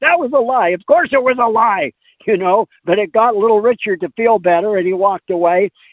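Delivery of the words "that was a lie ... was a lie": mock blunt, sharp, high barked retort. Retelling how Bob Lefsetz answered: imitating Bob Lefsetz barking. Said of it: "Lefsetz just barked at me".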